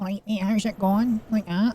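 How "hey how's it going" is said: nasal, high-pitched, broad Glaswegian accent. Speaker shows how Neds talk, in a nasal high-pitched Ned accent. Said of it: "It's dead nasally and it's quite high pitched".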